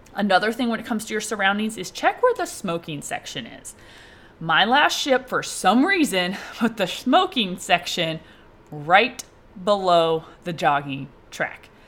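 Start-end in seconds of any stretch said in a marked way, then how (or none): 6.6-11.7 slow, deliberately drawn-out delivery. Giving advice about a ship's smoking section and jogging track, said slowly. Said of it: "I say that slow".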